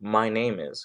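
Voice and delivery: ordinary talk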